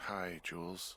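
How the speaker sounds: tired, sleepy, half-awake voice. Woken up and called on the radio, answering the caller tired. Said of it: "you sound tired".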